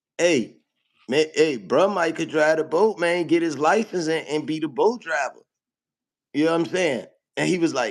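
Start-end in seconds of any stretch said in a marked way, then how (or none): none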